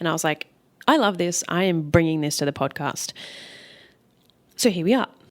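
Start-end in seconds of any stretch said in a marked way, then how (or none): none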